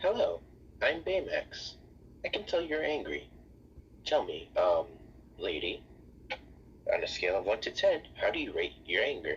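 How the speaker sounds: swooping sing-song character voice, pitch going up and down. Voicing a robot character asking a lady to rate her anger: Baymax voice. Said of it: "Baymax gets up and says".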